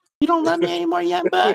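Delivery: very high, creaky, scratchy, badly done woman voice. Speaker does a bad woman impression of a line said to young buck. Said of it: "I'm doing a bad woman".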